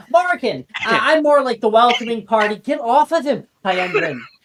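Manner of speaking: small, high-pitched little goblin voice. A game narrator voices a part-goblin boy greeting the player: [name]'s little goblin boy voice. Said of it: "that little voice, [name], is a part goblin boy".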